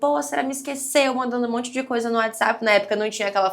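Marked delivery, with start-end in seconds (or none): 0.0-1.1 mock shouted outburst, voice pushed up high. Retelling a shout after being forgotten at class: imitating own yelling. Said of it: "eu gritando".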